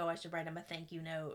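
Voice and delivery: derisive tone. Recapping events, quoting one drunk man mocking another, retelling a mocking remark. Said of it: "mocking Jack".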